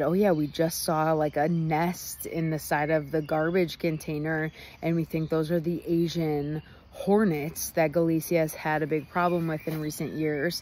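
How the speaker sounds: ordinary talk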